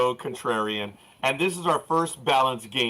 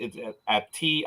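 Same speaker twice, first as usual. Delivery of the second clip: slow, halting, stumbling stutter. Previewing a football game, stuttering. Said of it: "sorry, stuttering".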